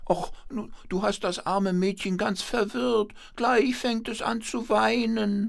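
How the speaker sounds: very high, squeaky little hand-puppet voice. A man voicing a rag on his hand, talking to his other hand: squeaky puppet voice. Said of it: "mit piepsiger Stimme".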